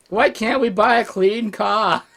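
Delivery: put-on Australian accent. Asked to say the line again, this time in an Australian accent. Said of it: "in an Australian accent".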